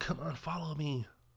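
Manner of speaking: acted, soft, coaxing, seductive voice.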